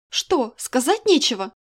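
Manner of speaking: defiant, challenging, jabbing tone. In an argument, the narrator speaks to a man who has gone silent, defiant. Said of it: "бросила я с вызовом".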